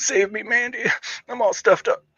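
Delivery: high, stuffed-up-nose impression voice. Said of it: "It's my Dale Keown impression".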